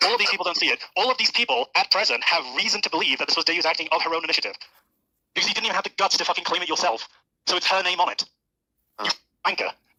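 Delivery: agitated, upset ranting tone. Confronting someone who didn't claim the act themselves: upset. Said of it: "I'm a little upset".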